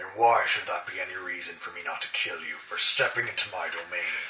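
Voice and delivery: very low, menacing, growling werewolf voice. A werewolf steps forward toward those who entered his domain, growling. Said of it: "He steps forward and growls".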